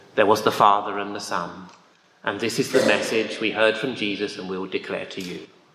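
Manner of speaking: low, flat, quick, dull newsreader monotone. A speaker reads scripture passages as a dull announcement: boring BBC monotone. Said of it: "boring BBC monotonous voice".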